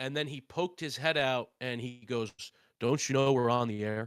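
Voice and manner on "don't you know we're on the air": loud, booming delivery. Retelling how a radio announcer leaned out and scolded: John Sterling voice.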